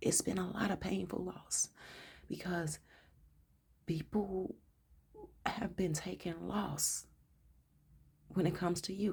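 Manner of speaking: fighting off crying. Speaking directly to the listener, holding back tears. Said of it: "I'm trying not to cry right now".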